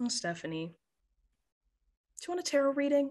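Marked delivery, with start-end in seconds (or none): 0.0-0.7 spoken through a sigh, on an out-breath. The grandmother answers her granddaughter's outburst: sighing. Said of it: "She just sighs and says".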